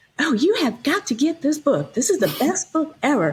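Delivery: sweet, cute Southern drawl, high and swooping. Retelling what a bookstore sales clerk said holding up a book, in a cute Southern drawl. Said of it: "she says in this really cute Southern drawl".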